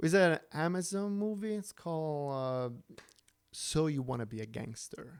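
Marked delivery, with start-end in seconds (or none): 3.5-5.2 patronizing, condescending tone, lower pitch. Answering a question about which movie it was, condescending. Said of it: "You said that so condescending though".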